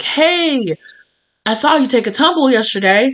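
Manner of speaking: put-on Australian accent. Acting out a neighbor speaking to the listener at the mailbox, in an australian accent. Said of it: "I keep he- hearing these people having Australian accents".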